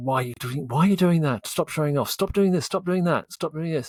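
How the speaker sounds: mock-angry scolding, nagging tone. Speaker recalls their mother's constant criticism, imitating angry scolding. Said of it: "But angry".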